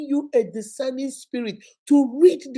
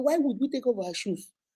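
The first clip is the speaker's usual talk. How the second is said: discreet, low, hushed voice, spoken aside; 6 dB quieter than usual. Retelling how a companion at a friend's house asked: imitating someone speaking in a low voice. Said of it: "in a low voice".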